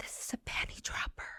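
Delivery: very quiet, hushed whisper. Retelling what the speaker whispered to a waiter, whispering. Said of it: "I whisper to him".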